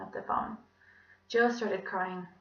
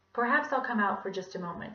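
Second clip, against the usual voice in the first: plain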